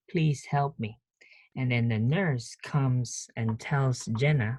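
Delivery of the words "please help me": usual speaking voice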